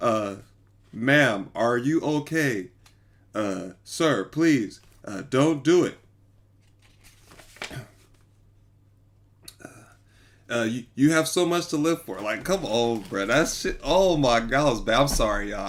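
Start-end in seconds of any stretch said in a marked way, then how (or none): 0.0-12.2 wooden, stiff, read-off-the-page delivery. Mocking the dispatcher on a call: imitating a dispatcher reading from a script. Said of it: "why that sound like he was reading from a script?".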